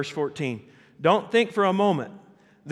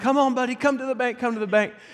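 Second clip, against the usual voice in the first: put-on, high, raised, far-carrying calling yell; 7 semitones higher than usual. Recalling calling out to a sinking swimmer in a pond, retelling his own yell. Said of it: "I'm yelling".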